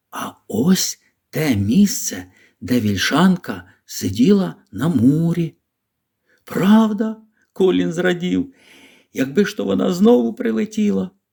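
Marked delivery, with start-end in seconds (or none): 0.1-5.5 whispering, slower. Narrator reads Mary speaking to Colin again a few steps on, whispered. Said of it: "Мері прошепотіла знову".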